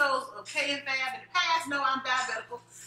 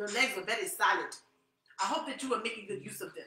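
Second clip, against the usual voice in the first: low, poor put-on Jamaican accent; 4 semitones lower, 4 dB quieter than usual. Retelling what he said about the speaker's legs, in a bad jamaican accent. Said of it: "That probably wasn't a good Jamaican accent".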